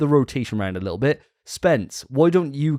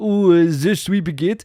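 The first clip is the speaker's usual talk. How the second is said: put-on French accent; 4 semitones higher, 4 dB louder than usual. Show how that guy swapped accents mid sentence, in a proper French garlic bread accent. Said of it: "proper like French garlic bread accent".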